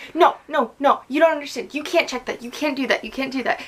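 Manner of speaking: put-on yelling. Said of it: "she's yelling at the T S A lady".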